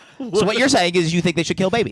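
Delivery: fast, high, challenging debate-style delivery. Teasing the other speaker in mock debate: Ben Shapiro impression. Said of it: "This is Ben Shapiro".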